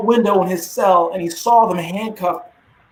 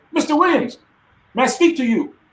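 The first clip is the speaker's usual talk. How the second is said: put-on Nigerian English accent, pitched up; 6 semitones higher than usual. Retelling a man walking up to him in the exercise area: Bright Ogado's Nigerian accent. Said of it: "a Nigerian accent".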